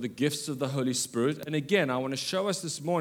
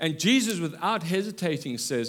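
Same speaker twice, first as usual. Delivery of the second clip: normal talking voice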